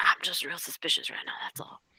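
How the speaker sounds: very quiet, low, hushed whispered murmur. Voicing what a character will say: really low voice. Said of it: "she's gonna say in like a really low voice".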